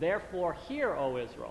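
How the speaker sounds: ordinary talk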